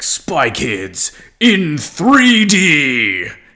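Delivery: loud, very slow, swooping movie-trailer announcer voice. Retelling a movie trailer's ending: imitating big trailer announcer voice. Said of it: "has the big announcer's voice".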